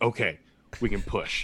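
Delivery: very deep, low, slow voice. Retelling what she told him, dropping her voice very low. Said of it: "Why are you dropping her voice like 7 octaves?".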